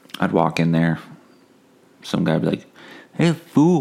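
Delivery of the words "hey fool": put-on Spanish accent, higher. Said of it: "I'm not gonna do the accent".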